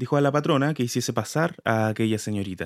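ordinary delivery

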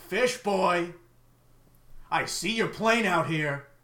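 loud, high yelling shout. A storyteller voices a figure who stops, looks around, then shouts. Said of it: "and then shout".

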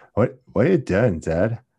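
put-on California surfer accent. Speaker quoting a man talking to his dad, in a california surfer accent. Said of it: "with that like California surfer accent".

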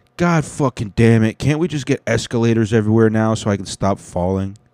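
ordinary delivery

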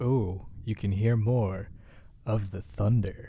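seductive, sultry radio-host style delivery. Hearing the thunder, the speaker suddenly slips into a sultry radio voice. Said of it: "I suddenly went to like sultry, sultry radio voice".

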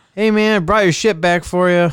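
very loud, overly friendly tone. Speaker retells what another player said after smashing the speaker's ship into the dock, mimicking an overly nice tone. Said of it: "Like the nicest tone ever".

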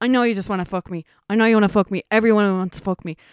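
shrill scream at full volume, very loud. Retelling what someone screamed while pinned down by a police officer: imitating Mustafa screaming. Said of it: "Mustafa was screaming".

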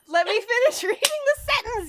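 high, laughing, protesting tone.

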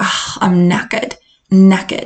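slipping into a slight British accent. Teaching British slang for being tired, the speaker slips into a slight British accent. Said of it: "going into my little accent".

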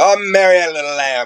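fed-up outburst. Retelling what they said when something got on their nerves: imitating own annoyed remark. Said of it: "if I was annoyed or something was getting on my nerves, I'd go".

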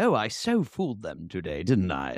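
put-on British accent with swooping, swinging pitch. Imagining Santos at home, wig off, dropping the act: Santos in a British accent. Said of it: "actually speaks in a British accent".

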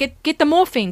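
put-on South African accent. Retelling a scene, the speaker quotes Rhea in a bad South African accent. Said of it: "that's a really bad South African accent".

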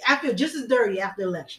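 ordinary delivery

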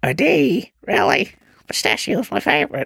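put-on high, creaky old grandma voice.

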